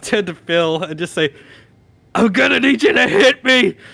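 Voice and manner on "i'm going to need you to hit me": acted, raging, raised, pitched-up demanding voice. Voicing a raging character pulling a rope, asking an ally: furious yell. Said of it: "I'm gonna rage".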